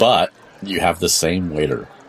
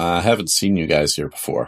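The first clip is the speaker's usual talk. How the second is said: usual speaking voice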